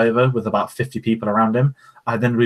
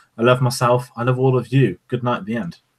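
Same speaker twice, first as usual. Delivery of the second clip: heavily laid-on, exaggerated posh British accent. Mocking a convention panel by Anthony Daniels: posh Anthony Daniels impression. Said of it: "Here's my posh voice".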